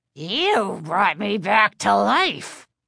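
raspy, rasping ventriloquist dummy voice. Reading a horror story, voicing the living dummy answering Chris, Mr. Woods raspy voice. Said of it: "he told her in his raspy voice".

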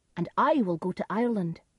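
ordinary delivery

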